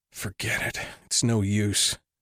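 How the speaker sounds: slow mutter under the breath. A rejected salesman standing outside Simon's door, to himself, muttering to himself. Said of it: "he muttered to himself".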